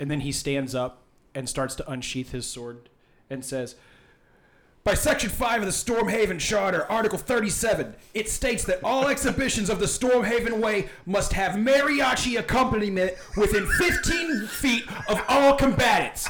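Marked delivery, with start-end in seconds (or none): 3.3-16.3 loud, clear, pitched-up, carrying proclaiming voice. Narrating a man who stands and draws his sword, in a loud, clear voice. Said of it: "And in a loud, clear voice".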